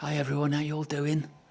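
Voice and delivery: whispering close to mic. Greeting everyone while coming into shot, whispering into the mic. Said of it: "I'm just whispering into my mic".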